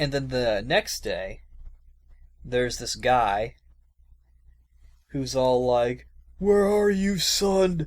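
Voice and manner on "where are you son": high, loud, distraught calling out. Retelling a game scene where a man searches for his son: imitating a distraught man. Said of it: "he's being all distraught".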